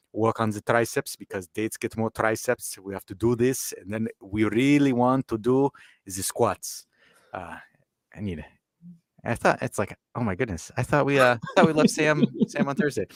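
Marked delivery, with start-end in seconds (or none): 0.1-6.8 badly put-on German accent, slower. Doing a voice that leaves listeners unsure if it is German or Arabic, really bad German accent. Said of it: "a really bad German accent".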